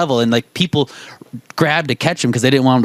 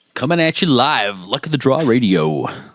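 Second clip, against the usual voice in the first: put-on radio DJ announcer voice. Podcast host introducing the next track, radio dj voice. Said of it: "I just like to do my DJ voice".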